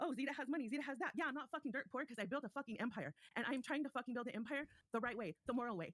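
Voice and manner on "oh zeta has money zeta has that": mocking put-on gossiping voice. Retelling what Roxy says behind her back: imitating Roxy running her mouth. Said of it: "So Roxy wants to run her mouth and say".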